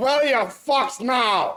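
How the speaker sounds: acted-out yell. Telling a joke where a man throws a woman into the ocean; retelling a yell. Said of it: "throws her in the ocean and yells".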